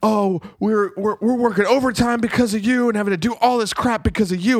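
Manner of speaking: put-on furious yelling. Describing a show's opening, the speaker quotes a man on a sailboat, retelling a furious yell. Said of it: "he's like yelling at him like he's mad".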